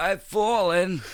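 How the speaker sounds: very high-pitched, fully cartoonish voice. Retelling how the cartoon turtle falls on his back: turtle from Rocko's Modern Life voice. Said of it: "he'd be like".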